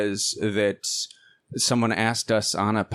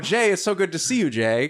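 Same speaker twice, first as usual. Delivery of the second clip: pitched-up, respectful, politician-like delivery; 7 semitones higher than usual. Imitating how J D Vance would greet the co-host: imitating J D Vance greeting. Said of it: "'cause that's what J D Vance does".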